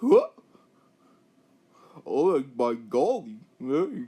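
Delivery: very loud, slow, swooping sing-song cartoon dog voice. Imagining how his team's Beetle would sound, doing a Goofy impression. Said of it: "I do not have a good Goofy impression".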